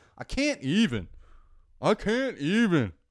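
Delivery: put-on very slow, drawn-out clumsy kid voice. Showing what the kids say: terrible kid impression. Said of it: "That's a terrible kid impression".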